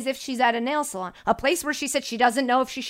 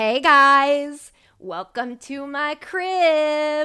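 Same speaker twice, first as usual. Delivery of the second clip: very slow, showy, welcoming host voice; 3 semitones higher, 4 dB louder than usual. Asked to act as if MTV is at their house, greeting viewers, MTV house-tour host voice. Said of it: "Do it as if MTV's at your house".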